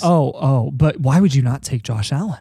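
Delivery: sarcastic, mocking put-on voice. Asking a question about quarterbacks to mock someone: sarcastic imitation of someone. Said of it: "I'm being sarcastic".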